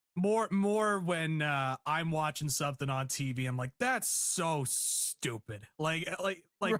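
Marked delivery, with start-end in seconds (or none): 3.8-5.7 play-acted, dripping, scornful disdain. Showing how they react to something stupid on tv: mock-disdainful scorn. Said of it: "this disdain in the voice".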